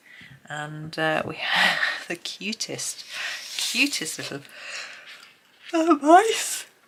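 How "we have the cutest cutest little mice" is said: high, stretched words pulled through a yawn. Going through a book's pages with viewers, yawning. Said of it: "excuse me, yawning".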